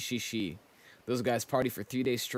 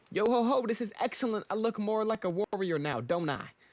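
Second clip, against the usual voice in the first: wild, over-the-top, very high cartoon character voice; 9 semitones higher than usual. Reading a game character's dialogue aloud: over-the-top character voice. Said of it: "The voice I'm giving these characters is insane".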